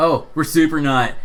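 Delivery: total surfer dude character voice. A player talks back to a game character, full surfer dude voice. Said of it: "full surfer dude on this guy".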